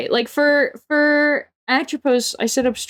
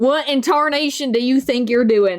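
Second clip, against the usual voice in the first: put-on old-West cowboy accent. Speaker demonstrates the phrase they use to get into character; Western accent. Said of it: "Like for like my Western accent".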